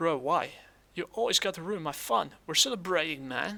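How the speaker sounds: bad put-on American accent. Playing a friend who wants to drink and celebrate: bad American accent. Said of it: "I'm terrible at doing an American accent".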